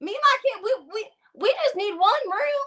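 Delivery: put-on high-pitched Southern accent, pitched way up. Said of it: "that's my southern accent".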